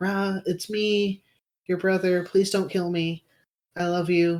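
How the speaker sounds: calming, coaxing, soothing, gentle tone. Speaking in character to a brother, asking not to be killed: soothing plea. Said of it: "going the soothe route".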